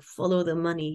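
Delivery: mock elderly man voice. Quoting a grandpa's old saying about money: imitating grandpa's thick Lithuanian accent. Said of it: "He was Lithuanian, had a very thick accent".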